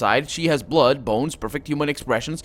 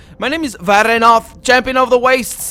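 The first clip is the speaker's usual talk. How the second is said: very different booming, very high-pitched voice; 9 semitones higher, 7 dB louder than usual. A woman speaks in a very different voice from her own mouth: booming Varenov voice. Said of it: "the very different booming voice that came from her own mouth".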